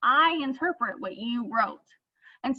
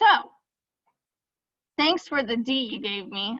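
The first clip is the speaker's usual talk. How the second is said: mocking, insincere, heavily sarcastic tone. Demonstrating the kind of sarcasm to avoid in emails, sarcastic. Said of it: "that's sarcasm".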